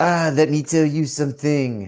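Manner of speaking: slow, drawn-out, put-on French accent. Chatting about sports, trying out a put-on french accent. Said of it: "That's my French accent, right?".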